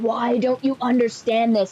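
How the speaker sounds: put-on Middle Eastern accent. Speaker retelling a man yelling at them, imitating thick Middle Eastern accent screaming. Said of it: "very thick Middle Eastern accent just screaming at me".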